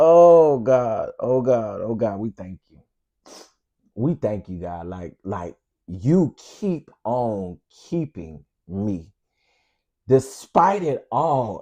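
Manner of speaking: emotional voice, emotion restrained and held in check. Thanking God for keeping them, holding back emotion. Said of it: "I'm trying not to get emotional".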